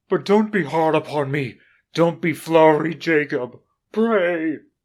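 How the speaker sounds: faltering, frightened pleading. Narrating the story, Scrooge pleads with Jacob: faltering, frightened Scrooge voice. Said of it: "[name] shivered and wiped the perspiration from his brow. / said [name]. / he demanded in a faltering voice".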